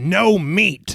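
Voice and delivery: distant-sounding shout.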